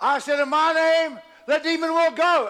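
very high, slow, drawn-out shout. Telling a story and acting out how one figure shouted at another; retelling a shout. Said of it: "Jesus shouted at him and said".

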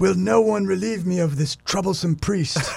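very high put-on English accent. Urged by the other speaker to try it, just for laughs, in an English accent. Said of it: "You should say in an English accent".

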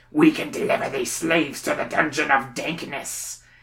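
grunting. Narrator reading the goblin chief's overheard words in a story, grunting. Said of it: "he grunts".

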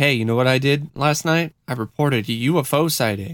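ordinary talk, nothing marked

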